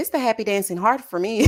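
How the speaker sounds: plain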